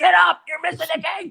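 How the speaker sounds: shrill, very high, loud holler. Recalling waking a sleeping man during a basketball game, retelling a yell. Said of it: "and I'm yelling".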